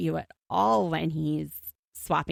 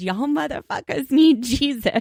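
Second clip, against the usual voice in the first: screamed out high and loud; 8 semitones higher, 6 dB louder than usual. Retelling a friend yelling out a car window: imitating Byron screaming. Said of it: "he rolls down the window and screams".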